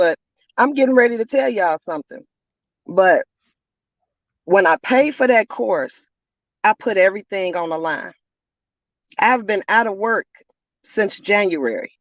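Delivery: trembling voice, rattling throughout. Telling others about earning money from a course: shaking voice. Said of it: "you might hear the rattling in my voice, the shaking in my voice".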